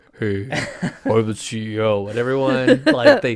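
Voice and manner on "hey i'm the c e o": deep, low voice, very slow and drawn out. Imitating a CEO said to have a deep voice: deep-voiced Bob impression. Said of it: "Bob's actually got a deep voice".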